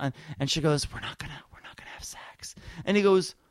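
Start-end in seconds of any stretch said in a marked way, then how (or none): 0.9-2.6 hushed, breathy whisper under the breath. Retelling what a woman on the show whispered: imitating a whisper. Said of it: "she whispers to him".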